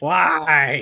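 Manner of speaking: most annoying, grating voice possible, very loud. Lamenting the dog he could have saved, in most annoying voice possible. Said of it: "I say in the most annoying voice I can make".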